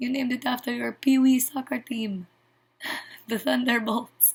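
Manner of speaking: put-on heavy, thick Russian accent, laid on. Recapping a superhero movie, the speaker quotes Elena's dad in a thick Russian accent. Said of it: "he has a thick Russian accent".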